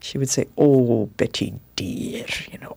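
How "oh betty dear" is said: put-on motherly Scottish accent. Quoting a beloved older woman's loving words: Scottish accent. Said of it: "had this beautiful Scottish accent".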